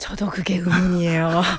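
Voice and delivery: low, whispered delivery.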